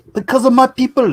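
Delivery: high-pitched, bad fake Japanese accent. Joking about why things are done better in japan: bad put-on japanese accent. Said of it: "that's not a Japanese accent at all".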